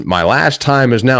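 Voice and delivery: ordinary talk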